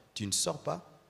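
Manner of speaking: quiet, calm, firm, steady voice with authority. Showing a rule can be stated without raising the voice: calm and firm. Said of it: "Je n'ai même pas besoin d'élever la voix".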